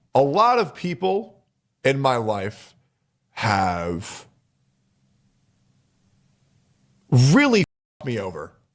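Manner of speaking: moved, emotional voice with drawn-out "have". A former content creator talking about people in their life, emotional. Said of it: "I'm getting emotional".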